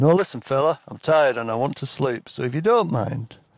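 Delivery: put-on macho voice, trying hard to sound tough. Retelling an encounter, the speaker answers a guy who wants something; put-on macho voice. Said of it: "I tried to sound as macho as I could".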